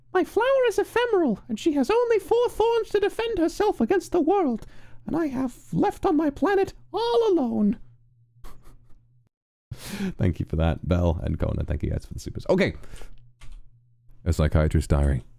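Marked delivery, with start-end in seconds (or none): 0.1-7.8 put-on very high, clear child voice. Asked to say the Little Prince's classic words: clear juvenile Little Prince voice. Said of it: "say the little prince's classic words in a clear juvenile voice".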